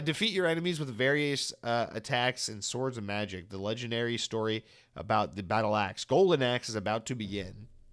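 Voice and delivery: ordinary talk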